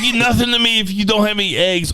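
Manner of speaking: very high-pitched, mocking caricature voice. Retelling what incels say: mocking incel voice. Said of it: "they're like".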